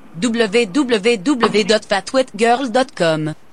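put-on French Canadian accent. Asked for a different voice, reading a web address in a French Canadian accent. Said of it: "What about French Canadian".

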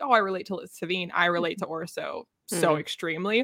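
ordinary talk

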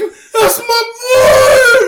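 shrill, very loud, high sobbing wailing yell. Retelling a movie scene where Cedric's dad cries out: imitating Cedric's dad shouting. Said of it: "His dad's like".

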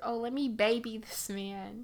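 ordinary talk

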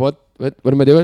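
put-on confused-sounding voice. Retelling how a startled friend reacted, imitating confused Charlie. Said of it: "still kinda confused and like".

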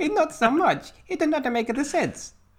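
very high-pitched, bad put-on Mexican accent. Repeating the other speaker's phrase, in a put-on Mexican accent. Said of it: "Here's the Mexican accent".

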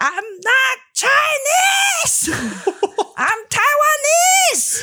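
mock very high, slow, swooping, stretched-out yell. Retelling yelling back at a stranger on the street: retelling her own yell. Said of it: "turn to that crazy person and yell back".

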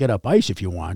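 put-on Finnish accent with a ribbing, teasing tone. Quoting his coach from the bench, in a Finnish accent. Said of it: "in that Finnish sort of accent".

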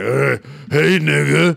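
mock smoker's raspy voice. Imitating an older single woman: imitating a voice like eating cigarettes. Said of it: "why do you sound like you eat a pack of cigarettes".

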